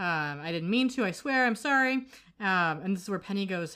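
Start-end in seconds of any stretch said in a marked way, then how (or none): 0.4-1.9 high, frantic, rising panicked begging. Retelling a scene where a character is caught: imitating panicked begging. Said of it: "panicking and, you know, begging".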